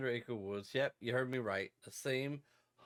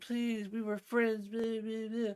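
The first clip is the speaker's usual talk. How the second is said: high, mock pleading, begging voice; 10 semitones higher than usual. Retelling a movie character begging for his life: imitating begging. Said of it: "After begging and begging".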